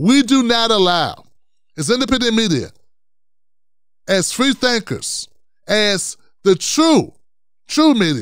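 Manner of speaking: very slow, deliberate delivery with spelled-out emphasis. Repeating a point for the people in the cheap seats, speaker says it real slow. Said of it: "Let me say that real slow again".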